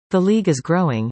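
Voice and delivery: ordinary talk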